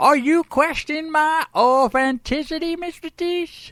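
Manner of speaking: dubious put-on Texas accent. Replying to the man who doubts the accent, in an iffy Texas accent. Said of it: "it just sounds a little iffy".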